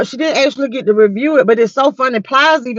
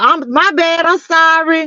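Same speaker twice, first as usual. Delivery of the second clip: hollering, shouted voice, pitched higher; 5 semitones higher than usual. Retelling how someone answered from across the room: imitating someone hollering across the room. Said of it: "hollered across the room and was like".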